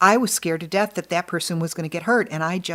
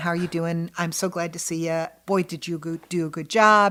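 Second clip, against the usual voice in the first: put-on friendly voice. Showing how the stage manager sounds when all goes well: imitating own friendly voice. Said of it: "you're just gonna hear my friendly voice".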